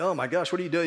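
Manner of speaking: usual speaking voice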